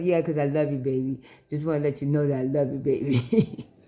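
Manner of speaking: put-on smooth pimp-style sweet-talking voice. Retelling what the husband said this morning, imitating his pimp voice. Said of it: "he had his pimp voice on this morning".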